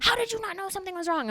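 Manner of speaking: put-on very high, scolding scream. Retelling a call where dad screamed at the speaker: imitating a screaming dad. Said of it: "My dad's screaming at me".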